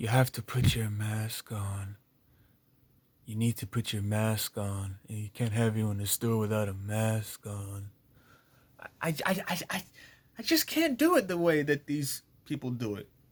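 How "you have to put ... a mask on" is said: soulless, emotionless, low flat dispassionate monotone. Retelling what a man said, imitating his dispassionate voice. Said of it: "in a very dispassionate voice".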